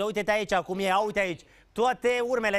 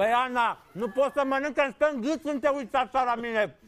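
high voice, speaking through a mouthful of food; 5 semitones higher than usual. TV presenter eating pie, talking to Ana; talking with mouth full. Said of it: "să mă scuzați că vorbesc cu gura plină".

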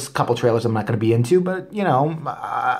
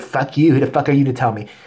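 mock hostile, aggressive, confrontational delivery. Imitating a moviegoer who talks back after a complaint: imitating a confrontational moviegoer. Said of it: "They wanna confront you".

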